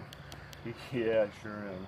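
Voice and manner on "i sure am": low, soft, sarcastically unexcited tone. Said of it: "You sound so excited".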